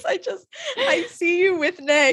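talking through laughter. Telling another speaker they match a New Girl character, laughing while talking. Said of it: "I'm laughing about it".

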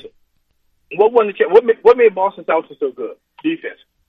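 rapid-fire, rushed, hurried talk. Calling in with ninety seconds to talk: speaking fast. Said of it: "I'm gonna speak fast".

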